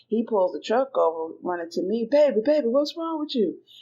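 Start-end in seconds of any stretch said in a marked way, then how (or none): 2.1-3.5 mock anxious, worried, pitched-up calling out. Retelling how her husband ran to her when she got emotional: imitating a worried husband. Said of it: "being extremely worried about me".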